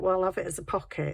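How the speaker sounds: ordinary delivery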